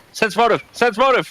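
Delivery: high shouted yelling. Calling out from the road to the others: yelling. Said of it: "yelling this from the road".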